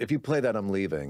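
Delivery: mock-angry, acted-out mad voice. Recounting how a man reacted when asked to play a video, acting out his anger. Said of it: "He got really mad".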